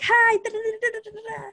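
high, chattering mock babble. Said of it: "I'd be like".

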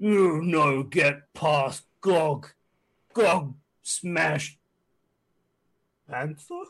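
loud brute monster hollering. Narrator voices the ogre Gog standing in a doorway, Gog the ogre yelling. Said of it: "just yells".

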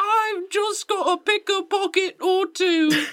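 mock British orphan voice, pitched way up, slow.

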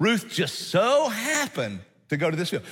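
mocking, heavily ironic, swooping sing-song tone. Showing how the writer's line about Ruth sounds, sarcastic tone. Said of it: "if you knew the tone of that, it would be like this... he's being sarcastic".

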